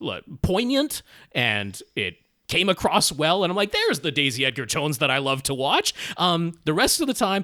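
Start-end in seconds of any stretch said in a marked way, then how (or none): none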